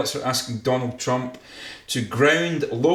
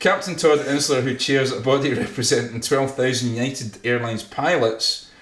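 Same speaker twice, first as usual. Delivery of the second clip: ordinary talk, nothing marked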